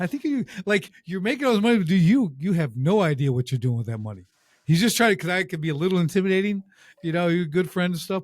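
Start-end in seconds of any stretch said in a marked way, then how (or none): none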